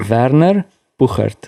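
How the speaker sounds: slow, Afrikaans-accented pronunciation. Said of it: "here goes the German surname with Afrikaans accent".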